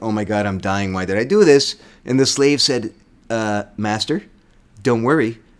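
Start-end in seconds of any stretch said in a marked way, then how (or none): 0.0-1.8 put-on panicked voice. Retelling how Domitius reacts when he thinks he is dying: imitating Domitius freaking out. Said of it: "Domitius started freaking out".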